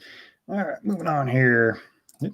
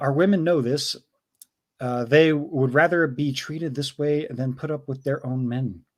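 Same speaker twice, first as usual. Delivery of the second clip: ordinary talk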